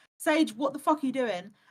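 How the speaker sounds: put-on frustrated snapping. Telling a friend how they once snapped at that friend, mock-frustrated snap. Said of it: "I got frustrated and I was like".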